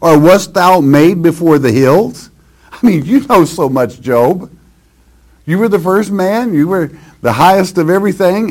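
mocking sarcastic tone. Speaker reads and paraphrases a scripture passage addressed to job, retelling sarcastic words. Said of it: "It's in a sarcastic way, as you can well tell".

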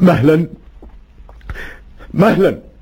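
crying through words, very high, sobbing and pleading. In a drama, Saleh calls out to his friend, who invites him in; sobbing. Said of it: "إنك تجهش بالبكاء".

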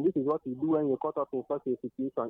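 ordinary delivery

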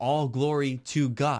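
ordinary talk, nothing marked

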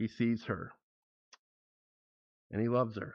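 soft, choked-up and tearful, emotional.

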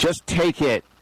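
firm, no-nonsense, stern. Speaker recalls holding out money to a man selling a ticket, retelling saying it sternly. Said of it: "I said kind of sternly".

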